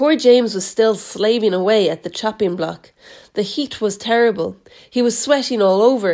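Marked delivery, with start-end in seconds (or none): none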